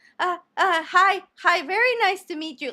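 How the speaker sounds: put-on high, nervous, jittery, stumbling stammer. Retelling how a man met the speaker's mom at a restaurant, imitating a nervous greeting. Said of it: "Like he was nervous to the bone".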